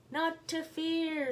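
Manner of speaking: tiny, squeaky, high-pitched mouse voice. Reading a story, Little Mouse calls her friends and family for help, squeaky Little Mouse voice. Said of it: "she squeaked".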